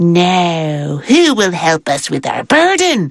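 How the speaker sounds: little man voice, slow, deliberate, drawn-out drawl. Telling a story, voicing the short round fellow asking for help: short round fellow's voice. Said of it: "a voice that sounded like this".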